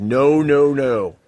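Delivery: loud cop voice, the word "no" yelled out. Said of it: "the cops start yelling at you immediately".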